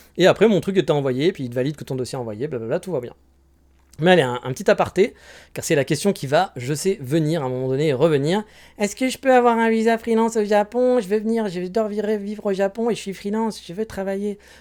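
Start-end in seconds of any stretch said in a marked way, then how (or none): 8.8-14.4 put-on dopey naive dreamer voice, pitched up. Acting out a naive viewer asking about a freelance visa: put-on dumb guy voice. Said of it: "je fais la voix de, de gros Goliot".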